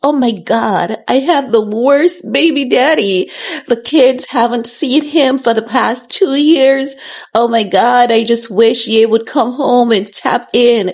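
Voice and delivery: put-on crying voice. Imitating Kim complaining on a podcast: mock crying as Kim Kardashian. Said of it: "she goes on podcast and she cries".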